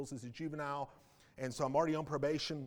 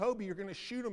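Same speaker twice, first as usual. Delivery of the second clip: high, mock tearful, frantic, panicked pleading tone; 7 semitones higher than usual. Retelling what the man's wife cried out as he held the pistol; retelling a frantic, tearful plea. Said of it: "frantic in tears saying".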